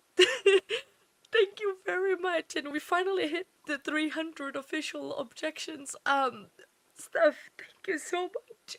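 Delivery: crying while talking. Thanking a viewer named Steph on stream while crying: crying while talking. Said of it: "Sorry, I am crying".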